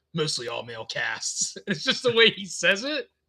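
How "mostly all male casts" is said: very low, deliberately dark and brooding voice. Retelling a man describing his films, imitating a dark, brooding voice. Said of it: "it's purposely like dark and brooding".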